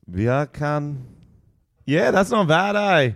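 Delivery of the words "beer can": put-on Jamaican accent, higher. Demonstrating an accent trick to the other speakers: jamaican accent. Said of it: "it's like with Jamaican, all you need to say is beer can".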